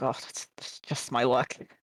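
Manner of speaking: quiet under-breath muttering. Voicing a character reacting to news about the gods: muttering under her breath. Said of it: "Liza just mutters under her breath".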